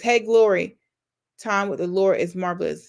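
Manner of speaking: normal talking voice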